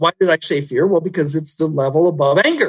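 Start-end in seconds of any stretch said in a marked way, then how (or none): none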